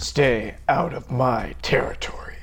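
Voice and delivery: put-on low tough voice. Asked by another speaker to do an impersonation of Heisenberg, Heisenberg impression, low and tough. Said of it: "Use that voice and say".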